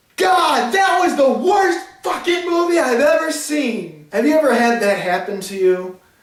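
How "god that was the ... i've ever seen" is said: high, loud, mock yelling. Retelling how two teenage girls reacted after the movie: imitating girls yelling. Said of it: "they yelled out to the entire crowd".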